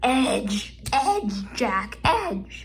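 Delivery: cracked voice breaking mid-phrase. While solving a Rubik's Cube, the speaker calls out for an edge, voice cracking. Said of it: "my voice just cracked".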